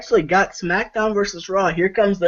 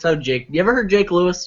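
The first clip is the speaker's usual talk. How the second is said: ordinary talk, nothing marked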